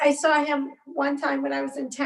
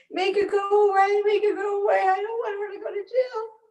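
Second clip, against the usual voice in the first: put-on high, sobbing child voice. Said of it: "and he starts crying".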